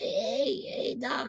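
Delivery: light, airy, breathy, casual, tossed-off delivery. Describing wearing the full Marty McFly outfit: Marty McFly voice. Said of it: "I'll work on the voice".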